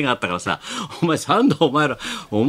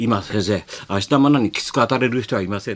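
confidential, hushed stage whisper; 5 semitones lower than usual. Retelling what a colleague quietly said to the speaker, quietly in a hushed voice. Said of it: "田中が小声でさ俺にさ".

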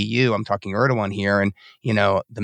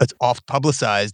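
usual speaking voice

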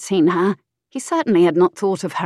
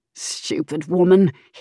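muttered words, under the breath. A man in bed next to his wife, muttering. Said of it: "he muttered".

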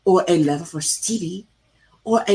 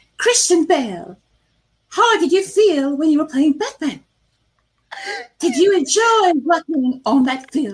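silly put-on American accent, pitched up; 9 semitones higher than usual. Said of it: "She has that silly American accent".

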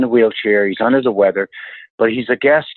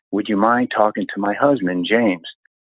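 imitated whisper. Retelling what the wife whispered in his ear: imitating a whisper. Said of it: "she whispers in my ear".

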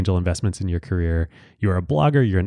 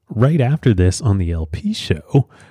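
plain

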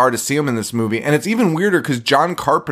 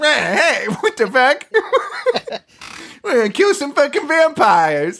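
squeaky, very high-pitched put-on voice; 13 semitones higher than usual. Picturing Joe Pesci cast as a vampire hunter: Joe Pesci impression. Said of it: "Joe Pesci walking around being like".

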